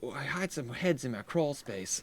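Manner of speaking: very soft, hushed, confiding killer voice. Mocking how the technical director sounded, imitating someone who hides heads: imitating someone who hides heads. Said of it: "That sounded like somebody who goes".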